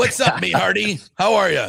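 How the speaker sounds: put-on rough, creaky pirate voice. Host greeting the on-air partner on Pirates night, pirate voice. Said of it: "got the pirate voice going on right now".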